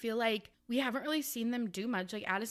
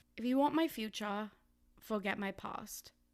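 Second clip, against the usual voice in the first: put-on British accent, slower. Redoing a bit from a video that got almost no responses: british accent. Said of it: "my British accent".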